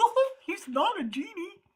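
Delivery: silly put-on goofy voice, high and slow. Mocking what people say when asked for prayer, a speaker uses a goofy voice. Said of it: "That's my goofy voice".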